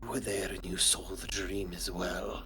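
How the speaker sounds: soft, hushed conspiratorial murmur. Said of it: "he'll talk in a hushed, conspiratorial tone".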